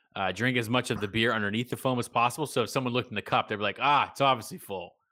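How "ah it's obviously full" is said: ordinary talk, nothing marked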